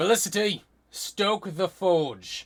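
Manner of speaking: very loud, shrill, high-pitched barked shout. Telling a story, voicing a woman who shouts an order at Felicity: shouting. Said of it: "she just shouts".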